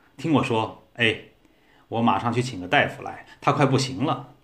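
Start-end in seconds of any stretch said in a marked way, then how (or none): none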